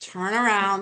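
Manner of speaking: put-on disgusted navigation voice. Joking about the GPS after a wrong turn, mock-disgusted GPS voice. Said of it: "you can hear the disgust in her voice".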